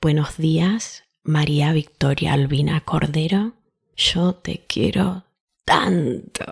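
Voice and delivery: tender, loving, sweet, gentle tone. Showing how she greets herself aloud each morning, in a sweet, gentle tone. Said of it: "that sweet, gentle tone".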